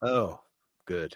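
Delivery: sarcastic delivery with zero enthusiasm. Reacting to a heady topic being announced: unenthused sarcasm. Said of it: "Don't sound so thrilled".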